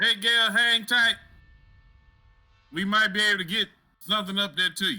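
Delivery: yelling out, shouting. Yelling up to Cowboy Gale in character: yelling up to someone. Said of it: "I'm gonna yell".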